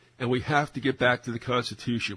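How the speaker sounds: heavy stress leaned on the word have. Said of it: "the two things they get down to is".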